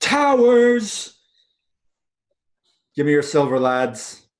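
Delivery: boisterous, hearty call, "Towers" drawn out. As the players come in, a character greets them with a bellowing yell. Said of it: "he's bellowing like as you get in he yells".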